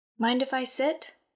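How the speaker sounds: mild, gentle, easy tone. Narrating a woman asking a man at the table, asked softly. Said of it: "she asked softly".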